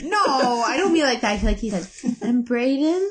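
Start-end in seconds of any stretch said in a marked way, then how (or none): 2.2-3.1 wistful, hopeful, mournful tone. Imitating how a letter writer asked a question: imitating a hopeful, mournful question. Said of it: "really hopefully, but also kind of mournfully".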